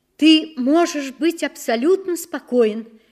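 high, loud near-shout, almost a cry. The mother answers the father as he leaves for war, almost shouting. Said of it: "почти крикнула мама".

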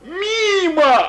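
gleeful, very high, loud, drawn-out shout. A soldier shouts as a gunshot misses him, joyful shout. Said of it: "радостно крикнул солдат".

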